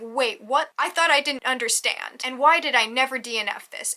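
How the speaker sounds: ordinary delivery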